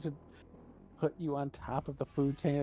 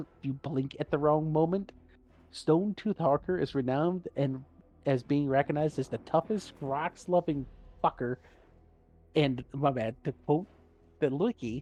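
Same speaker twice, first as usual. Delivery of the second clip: ordinary delivery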